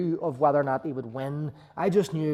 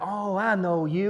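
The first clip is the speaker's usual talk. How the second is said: heavy Texas twang, very slow and drawn out; 4 semitones higher than usual. Retelling how the man answered when asked to lend his jacket, Porter Freeman impression, big thick Texas accent. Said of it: "with like a big, thick sort of Texas accent".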